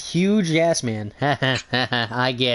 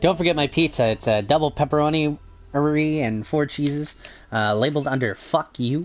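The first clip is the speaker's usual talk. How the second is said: normal talking voice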